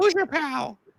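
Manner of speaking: squeaky, very high cartoon voice. Asked to do cartoon voiceovers, showing off a Mickey voice. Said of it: "I could do Mickey".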